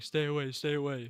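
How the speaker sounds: loud yell. Retelling a scene where Derek wakes up kidnapped: imitating Derek yelling. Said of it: "so he wakes up and he's yelling".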